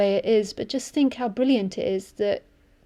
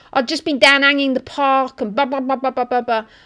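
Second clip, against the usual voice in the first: mock inner-city London street accent; 3 semitones higher, 6 dB louder than usual. Retelling a man heard talking about chakras; imitating inner-city London accent. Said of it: "he spoke like real inner city London".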